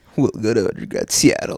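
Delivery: put-on zesty surfer voice. Mocking how the other speaker said a line, in a zesty surfer voice. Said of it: "like a zesty surfer".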